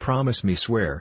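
plain

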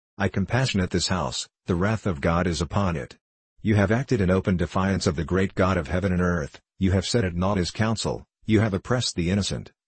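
ordinary delivery

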